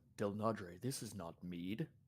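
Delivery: voice dropped to a hushed stage whisper. Acting out how Levi will react to a drink poured into his cup, half-whispering as Levi. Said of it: "lowers his voice to a whisper".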